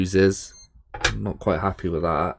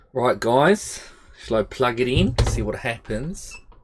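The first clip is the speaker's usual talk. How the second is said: put-on Australian accent; 4 semitones higher than usual. Talking to the guys before plugging something in, putting on an australian accent. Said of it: "that was my Australian accent".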